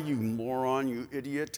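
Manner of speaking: low, soft mumble under the breath.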